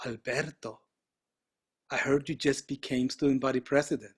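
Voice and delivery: sultry, sexy, seductive come-hither voice. Retelling a phone call from an unknown caller: imitating a sexy voice. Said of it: "I hear this sexy voice".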